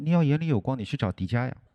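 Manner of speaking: mock under-the-breath grumble, muttered. Retelling a remark grumbled within the boss's hearing: retelling a muttered remark. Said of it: "我就小声嘀咕了一句".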